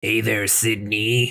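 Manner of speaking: deep, creepy sinister voice. Recapping Scream, quoting Stu through a voice changer, in the Ghostface voice. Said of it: "it's the fucking Scream voice, the Ghostface voice".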